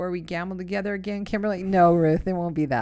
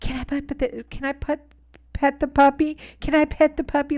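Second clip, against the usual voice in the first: put-on high, babyish little-girl voice; 7 semitones higher than usual. Speaker recounts a woman on a show looking at a towel animal; baby voice. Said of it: "in a baby voice".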